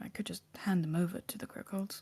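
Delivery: hushed, whispered mutter under the breath. Playing a character, glancing at Aelia during the scene, muttered under breath. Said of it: "under my breath".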